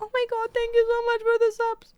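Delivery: very high, put-on bawling, sobbing voice. Retelling fake crying while thanking for subs: imitating own fake crying. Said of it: "I would literally just bawl my shit and be like".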